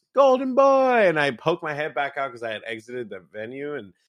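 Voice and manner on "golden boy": put-on shrill, very high-pitched shout. Retelling leaving the venue when a kid calls out: imitating a kid yelling. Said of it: "this kid just yells".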